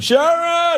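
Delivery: very high shouted yell of a name.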